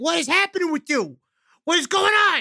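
high-pitched yelling, calling out loudly. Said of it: "and I yelled up".

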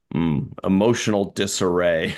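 plain

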